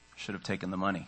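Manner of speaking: low, soft rueful deadpan.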